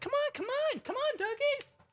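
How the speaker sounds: mock very high shout, as if from far away. Admitting it was them calling the dogs on coming in: retelling a distant shout. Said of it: "I'm really far away and I'm shouting it".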